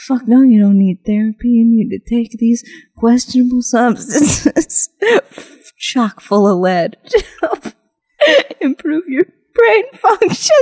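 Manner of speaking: words breaking up with laughter. Leading a mock sexy infomercial, laughing while talking. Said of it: "I can't stop laughing".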